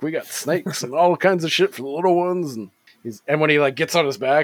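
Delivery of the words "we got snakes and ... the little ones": TV commercial sales-pitch voice. Retelling a TV commercial scene, Beetlejuice pitching like a TV ad. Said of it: "pitching it".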